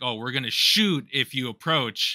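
ordinary delivery

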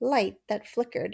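plain reading voice

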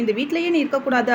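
ordinary delivery

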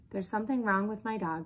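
plain

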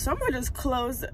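voice breaking and cracking at the end. Ending a vlog from the car after work, voice cracking. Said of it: "y'all hear that voice crack?".

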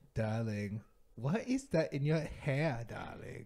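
put-on sexy English voice. Speaking the pretend "hot English" with another speaker: put-on "hot English" voice. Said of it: "But that was hot".

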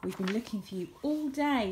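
ordinary delivery, nothing marked

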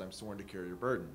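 ordinary talk

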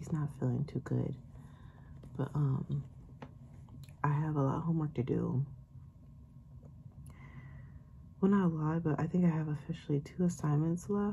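soft, quiet, hushed, kept-down voice. Mother vlogging while her little boy naps, talking quietly. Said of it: "I'm talking a little quiet".

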